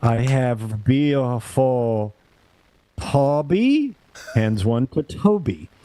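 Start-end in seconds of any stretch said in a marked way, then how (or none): 0.0-3.9 very slow, deliberate, drawn-out put-on woman's voice. Telling how a woman handed each man his card, putting on the voice of the woman with the bills. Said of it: "I'm doing the fucking voice".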